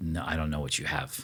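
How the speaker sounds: monotone delivery. Describing a podcaster turning down the water a guy offers, in a monotone imitation of her. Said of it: "very monotone".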